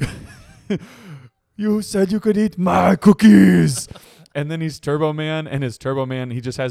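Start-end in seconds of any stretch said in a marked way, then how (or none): 1.6-3.9 put-on loud, high-pitched, slow Austrian accent. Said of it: "Arnold in his accent".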